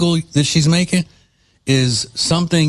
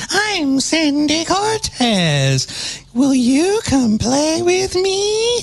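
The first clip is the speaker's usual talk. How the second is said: very high, very slow, creeping possessed-doll voice. Mocking how she talks while riding a scooter, doing Sandy Cortez as little possessed doll. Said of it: "talking like a little possessed doll in a horror movie".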